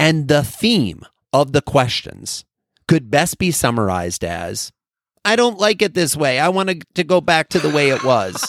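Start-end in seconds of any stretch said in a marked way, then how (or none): 5.3-8.5 high, belittling, disparaging put-on voice. Summing up the employees' questions at a q&a session, in a mocking put-on voice. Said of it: "I make that voice, and that's disparaging".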